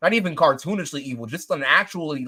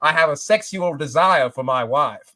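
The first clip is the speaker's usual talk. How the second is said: put-on, exaggerated British accent. Imitating an actor saying simple words funnily: Matt Berry voice. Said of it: "he says them in a British accent that does not exist anywhere besides Matt Berry's vocal cords".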